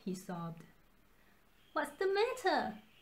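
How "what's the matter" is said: anxious, worried tone with raised pitch. The Monkey King's subjects ask him after he sobs on the ground, worriedly. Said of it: "his subjects asked worriedly".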